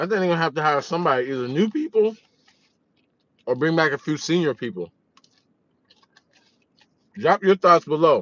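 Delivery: talking while eating aggressively, between bites. Speaker giving their prediction to viewers, talking while eating aggressively. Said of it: "I'm sorry for eating so aggressively".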